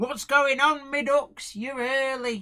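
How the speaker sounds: loud, high, hammed-up put-on regional English accent. Reading out greetings to listeners, the speaker greets one in a put-on regional English accent. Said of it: "I've got to put on the accent for this one".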